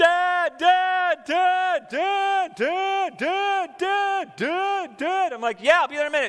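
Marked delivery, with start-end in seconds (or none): 0.0-5.3 put-on very slow, high, drawn-out, repeated child's calling. A parent describing a child calling from another room, imitating a child yelling. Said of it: "they're yelling".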